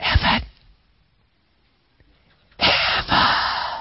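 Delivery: faint, soft, breathy whisper. Showing how not to call children in from play for dinner, soft whisper. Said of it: "that still small voice to whisper".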